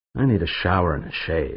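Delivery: ordinary delivery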